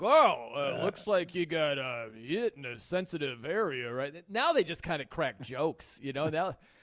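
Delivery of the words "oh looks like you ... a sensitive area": put-on slow, prim, stiff, uptight old-school announcer delivery. Retelling how announcers used to react to a low blow: imitating an uptight announcer. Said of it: "these announcers would be so uptight".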